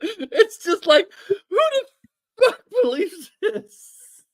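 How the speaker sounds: talking through laughter. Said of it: "I cannot stop laughing".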